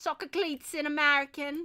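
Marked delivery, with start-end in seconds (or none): 0.0-0.7 slipping into a higher-pitched British accent. Meaning to say soccer cleats in American, slipping into a British accent. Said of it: "why did I use a British accent for saying soccer cleats".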